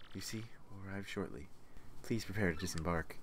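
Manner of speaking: very low, soft, hushed ASMR whisper. Reading out game dialogue for the others playing along, ASMR-style whisper. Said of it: "Why are you doing it as if like an ASMR?".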